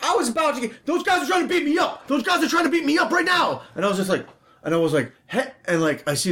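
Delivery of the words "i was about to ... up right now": very high, alarmed, screaming cry. Retelling how a man came running across the street, imitating a man screaming. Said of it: "this guy starts screaming".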